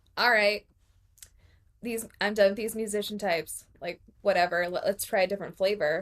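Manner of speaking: usual speaking voice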